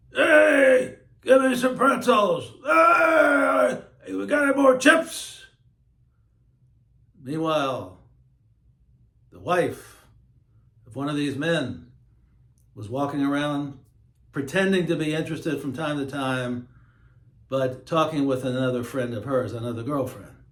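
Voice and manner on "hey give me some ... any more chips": high-pitched, loud yell. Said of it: "the guys would yell".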